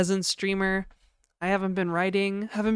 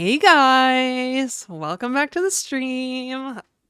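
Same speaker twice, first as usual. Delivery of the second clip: put-on high, bright, girly e-girl streamer voice; 5 semitones higher, 6 dB louder than usual. Demonstrating the e-girl voice they could speak in: put-on e-girl voice. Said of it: "I could speak in the e-girl voice".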